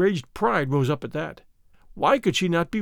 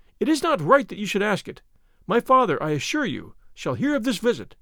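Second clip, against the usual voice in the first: ordinary delivery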